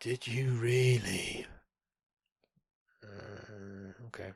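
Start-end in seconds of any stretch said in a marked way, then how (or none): 0.0-1.5 put-on, very exaggeratedly feminine English accent. Retelling a phone call, quoting the man who answered: imitating an effeminate Englishman. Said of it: "a very effeminate sounding Englishman".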